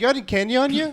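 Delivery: put-on shrill, very high, loud kid's yell. Retelling a kid asking for candy on Halloween: imitating a kid yelling. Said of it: "And a kid just yells".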